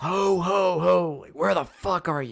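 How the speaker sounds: shrieking, very high, drawn-out, slow screaming. Retelling a film scene where the Santa guy searches: imitating a screaming killer Santa. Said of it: "just starts, like, screaming".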